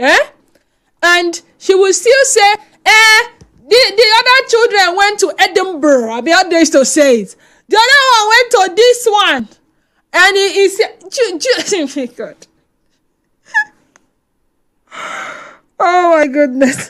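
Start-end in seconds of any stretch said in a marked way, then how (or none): 10.1-16.9 very slow, spoken through laughter. A show host speaking to listeners, laughing while talking. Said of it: "I'm sorry I'm laughing".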